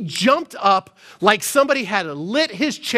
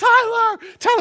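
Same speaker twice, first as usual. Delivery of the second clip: put-on very high calling yell; 12 semitones higher than usual. Retelling calling after a kid running to the lobby; retelling a yell. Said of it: "And I'm like yelling like".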